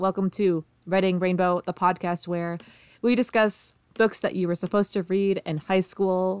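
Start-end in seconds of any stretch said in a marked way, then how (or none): 0.0-1.6 deadpan, flat, emotionless monotone. Podcast host welcoming listeners to the show: flat, emotionless. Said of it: "I have no emotion in my voice right now".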